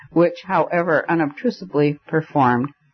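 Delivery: plain reading voice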